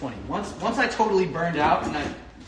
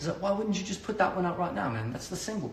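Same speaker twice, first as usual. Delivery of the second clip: poorly done put-on British accent; 5 dB quieter than usual. Retelling what someone said after hearing the album, in a terrible British accent. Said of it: "Terrible British accent I'm doing".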